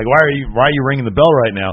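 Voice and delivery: ordinary talk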